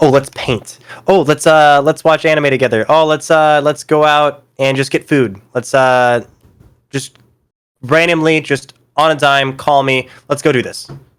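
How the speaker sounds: upbeat, playful, fun, spur-of-the-moment tone. Describing someone's personality by acting out her suggestions: imitating a fun, playful person. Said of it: "She's so fun. She very much like".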